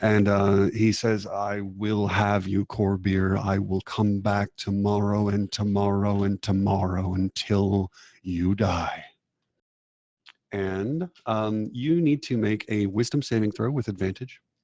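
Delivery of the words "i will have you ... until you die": raggedy, ragged possessed entity voice. Entity possessing a woman threatens someone, in a raggedy possessed voice. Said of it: "You can hear it going raggedy".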